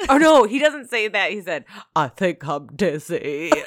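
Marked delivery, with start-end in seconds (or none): 1.9-3.5 congested, stuffed-up, head-cold sounding delivery. Repeating what he said on the bed, in a stuffy Forrest Gump voice. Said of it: "You just sound like you have a cold".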